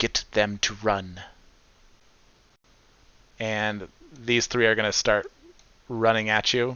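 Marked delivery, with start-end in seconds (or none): 0.0-1.2 distant, muffled female voice. Game master voices a hidden figure calling from the trees, muffled female voice. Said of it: "hear a muffled female voice from the trees".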